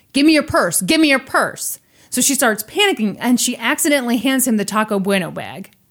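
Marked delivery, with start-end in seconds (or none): 0.1-1.8 high, loud yelling. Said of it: "He started yelling at her".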